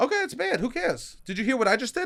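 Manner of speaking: high, squeaky toy voice. Asked by the other speaker to show a squeaky voice, squeaky toy-come-to-life voice. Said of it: "sounded like a toy that came to life".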